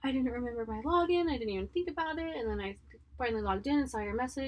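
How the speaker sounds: tearful, crying through words. Retelling what a woman said while crying on the phone: imitating someone crying. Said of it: "she's like crying and she's like".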